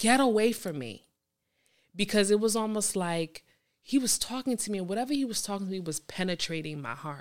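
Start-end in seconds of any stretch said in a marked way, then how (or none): 0.0-1.0 put-on sobbing scream-crying. Retelling crying in a car in front of his house: imitating a scream-cry. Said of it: "I was screaming, crying, and I was like".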